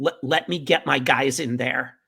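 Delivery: ordinary delivery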